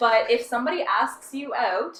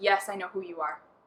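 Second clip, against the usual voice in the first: mock deadpan delivery, much quieter; 4 semitones lower, 5 dB quieter than usual. Retelling being introduced to a man, the speaker imitates his deadpan reply. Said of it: "just deadpan shakes my hand".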